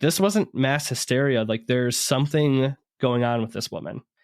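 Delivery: normal talking voice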